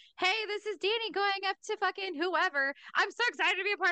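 forced, effortful, high-pitched, put-on excitement. Retelling recording a first voicemail message, imitating own forced excited voice. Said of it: "I had to sound excited".

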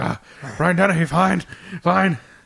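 high, loud, acted out-of-breath gasping and puffing. Imitating the other speaker getting winded walking across a stream: imitating someone winded. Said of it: "You're like".

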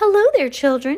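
very high, fake-sounding call. Reading the story, the narrator voices Shirley calling to the children in a phony high voice. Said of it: "she called out in a phony high voice".

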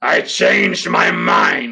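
growled words, very slow. Narrator reading the alligator person's line to Alicott, growling. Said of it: "he growled".

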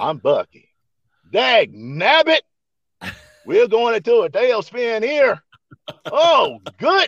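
put-on hillbilly accent. Asked by the others to hear their hillbilly, doing a Bucky hillbilly voice. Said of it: "let's hear your hillbilly".

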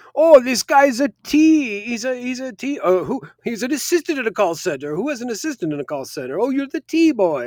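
high, loud, condescending game show host voice. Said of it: "so condescending and so demeaning".

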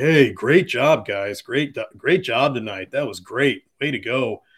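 loud, really sarcastic, fake praising tone. Retelling fans taunting a general manager at the elevator: imitating fans being sarcastic. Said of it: "saying really sarcastically".

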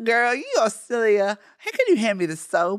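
put-on Southern belle accent, sing-song. Improvising a scene as Southern belles in a gym shower: put-on Southern belle accent. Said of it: "so we're two Southern belles in a gym shower laughing".

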